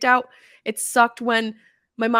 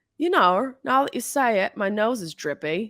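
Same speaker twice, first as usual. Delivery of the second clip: bad, terrible put-on New Zealand accent. Quoting what Rose said about her nose: Rose's terrible New Zealand accent. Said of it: "it's my terrible attempt at a New Zealand accent".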